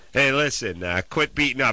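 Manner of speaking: ordinary talk, nothing marked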